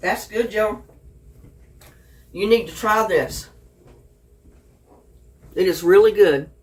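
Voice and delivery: speech with mouth full of food, chewing. A speaker tasting food tells joe to try it, talking with mouth full. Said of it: "I got my mouth full".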